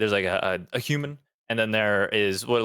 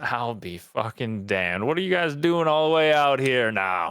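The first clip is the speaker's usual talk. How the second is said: amused, smiling orc voice; 2 semitones higher than usual. Narrating a game, speaker voices an orc who sees the players approaching, grinning orc voice. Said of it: "kind of gets this grin on his face, and he goes".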